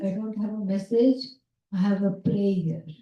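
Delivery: ordinary talk, nothing marked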